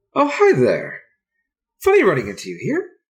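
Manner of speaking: very peppy, bouncy, high, feminine sing-song voice. Narrator voices Erica greeting the listener at a park bench, peppy feminine Erica voice. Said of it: "Very peppy, feminine voice".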